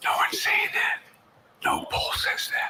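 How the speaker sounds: creepy, hushed whisper, barely voiced. Answering a reporter's question about staying in the race, whispering. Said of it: "Why is he whispering?".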